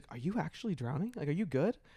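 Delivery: confidential, soft, hushed half-whisper. Retelling how a friend leaned in and checked on them: imitating a half-whisper. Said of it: "whispers to me".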